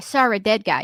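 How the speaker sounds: put-on Boston accent. Repeating a line learned from The Departed, in a Boston accent. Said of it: "That's how you do a Boston accent".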